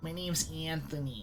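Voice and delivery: put-on nasal voice. Trying out a put-on nasally voice while giving a name. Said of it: "I'm gonna have a nasally voice. Something like this".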